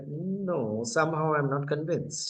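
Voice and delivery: normal talking voice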